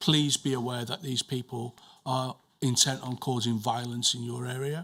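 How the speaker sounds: ordinary delivery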